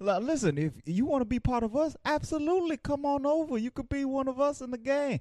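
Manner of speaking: very high-pitched, sweet, coaxing tone. Retelling a movie scene, doing Lotso in manipulator mode. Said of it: "You are very good at this".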